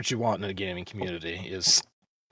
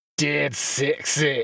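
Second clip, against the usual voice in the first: higher-pitched mock Scottish accent; 6 semitones higher, 3 dB louder than usual. Saying a requested nickname to another speaker: Fat Bastard Scottish accent. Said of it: "I want the Scottish fat bastard accent when you call me dead sexy".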